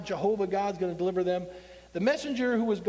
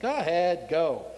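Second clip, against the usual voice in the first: usual speaking voice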